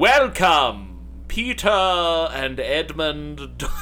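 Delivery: slow, careful enunciation with "and" stretched out. Recalling a middle school stage performance: Aslan voice. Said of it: "so this was my Aslan voice".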